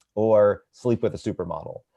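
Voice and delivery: ordinary talk, nothing marked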